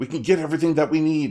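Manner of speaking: eager, excited voice. Voicing residents running to the docks: excited townsfolk. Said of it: "scurry off and start walking towards the docks very excitedly".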